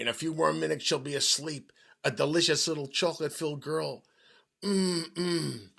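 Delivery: huge, very loud, booming monster dinosaur voice. Reading a story, voicing a noise that sounds like a dinosaur, in a loud booming dinosaur voice. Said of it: "a loud booming no- noise that sounded like a dinosaur saying".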